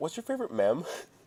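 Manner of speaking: put-on soft, grave, dead-serious tone. Retelling how their mom once asked them a question: imitating mom's serious tone. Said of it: "she had like a very serious tone".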